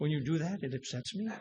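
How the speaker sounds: hushed, very soft, overly polite sweet voice. Imagining a bartender scolding a brawler: imitating a very nice voice. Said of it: "does he say in a very nice voice".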